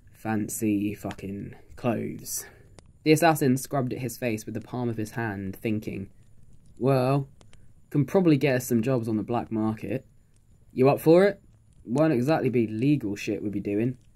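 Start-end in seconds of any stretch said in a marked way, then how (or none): 0.1-2.4 low, forced out between clenched teeth. In a role-play, the character says the next word through gritted teeth. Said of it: "says the next word through somewhat gritted teeth".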